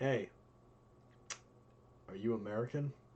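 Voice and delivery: choppy, halting, broken English. Telling a story where a guy approaches an american at a bar, in broken english. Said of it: "in broken English".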